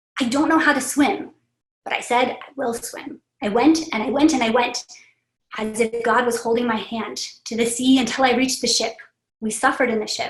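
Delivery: ordinary talk, nothing marked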